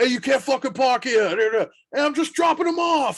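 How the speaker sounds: put-on thick, laid-on New York accent. Retelling what someone said to them when they arrived, in a thick New York accent. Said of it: "The only thing that came out were thick New York accents".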